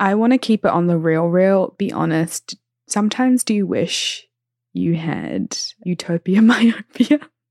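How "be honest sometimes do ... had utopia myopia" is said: laughing, swooping, drawn-out talk breaking into laughter. Asking another speaker an honest question, laughing while talking. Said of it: "I can't even say it without laughing".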